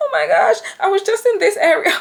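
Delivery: put-on American accent, pitched very high. Retelling a call to emergency services, in a put-on American accent. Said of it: "Not the American accent".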